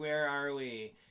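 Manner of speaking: mock drunk woman's voice. Retelling what a drunk woman said in the car: imitating a drunk woman. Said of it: "and this is how she talks".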